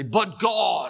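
eloquent, grand evangelist preaching voice. Showing how you sometimes wax eloquent when you preach, in a Billy Graham voice. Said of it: "go into my Billy Graham voice".

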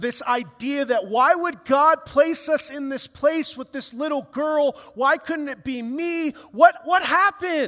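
anger welling up. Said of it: "Anger starts welling up".

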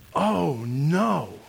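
acted, troubled-sounding voice. Retelling what someone said while eating together the next morning, imitating a troubled tone. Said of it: "in a tone of voice that was really, really troubling".

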